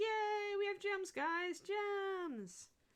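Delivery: cheery, high, very slow, drawn-out happy voice. Streamer talking to the chat, using a happy voice. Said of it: "my happy voice for Kiri in the morning".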